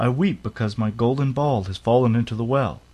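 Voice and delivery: ordinary delivery, nothing marked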